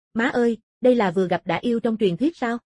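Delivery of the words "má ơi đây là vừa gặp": ordinary delivery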